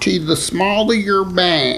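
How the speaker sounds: high, slow silly put-on voice. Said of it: "what, what voice was that".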